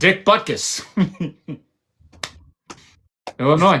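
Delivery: words breaking up with laughter. Reading notable names from a Google search to a co-host, laughing while talking. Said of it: "I can't say it without laughing".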